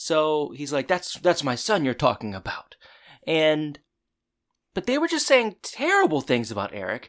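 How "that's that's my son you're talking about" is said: put-on angry voice. Retelling Alan defending his son to Mister Feeney: imitating Alan getting angry. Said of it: "Alan's getting angry at Mister Feeney".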